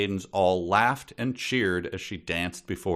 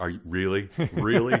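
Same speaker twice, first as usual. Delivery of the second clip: annoyed, exasperated, thoroughly fed-up tone. Acting out an impatient knight forced to watch fireworks: mock-annoyed Sir Victor voice. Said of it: "Arms crossed, like".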